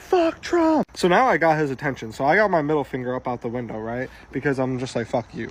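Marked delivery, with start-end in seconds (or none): 0.0-0.8 very high, loud, yelled scream. Speaker retells yelling again at a truck driver stopped at a yield: retelling a scream. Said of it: "I literally screamed it again".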